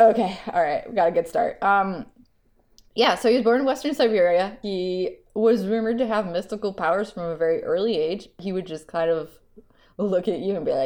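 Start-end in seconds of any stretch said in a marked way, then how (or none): none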